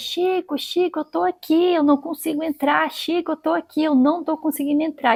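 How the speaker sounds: mock shouting, high and repeated, calling out. Retelling a story of someone shouting from outside, unable to get in: imitating someone shouting. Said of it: "e gritava".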